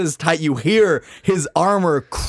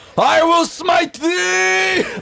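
very high, very slow, shrill scream, thee stretched. Voicing the dad rushing forward with his sword: screaming. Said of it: "Your dad's screaming".

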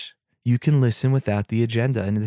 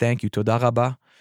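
put-on Russian accent in Hebrew speech. Retelling what a woman said after hanging up the phone, in a Russian accent. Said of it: "Hebrew with a Russian accent".

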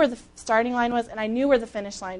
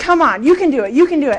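yelling, louder and faster; 6 dB louder than usual. Recounting how she yelled encouragement to herself during a run, retelling a yell. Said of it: "I am yelling it out loud".

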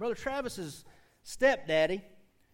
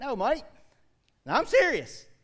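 put-on loud, swooping Australian accent; 6 semitones higher, 8 dB louder than usual. Retelling a man walking up and answering a question, imitating Henry's Australian accent. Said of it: "He's talking like some Australian dude".

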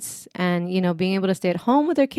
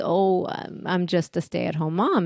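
put-on sheepish tone, much slower; 4 dB quieter than usual. Retelling how she answers when someone asks what she does for a living, sheepishly. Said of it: "she like sheepishly says".

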